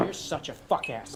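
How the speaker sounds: whispered, airy, breathy, hostile tone. Quoting a movie line: Jake Gyllenhaal impression. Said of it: "That's Jake Gyllenhaal".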